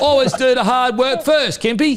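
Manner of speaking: very high put-on English London accent. Quoting what he used to say, put-on London accent. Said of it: "you sound like you're from London".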